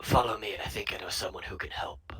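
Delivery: rough, deep, gravelly, low put-on voice. Retelling an encounter, the speaker quotes a man's reply in a deep gravelly voice. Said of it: "in a deep gravelly voice".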